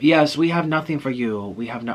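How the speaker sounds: clumsy, bad put-on attempt at a Russian accent. Retelling what a hotel manager said: attempted Russian accent. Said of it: "I can't do Russian accent".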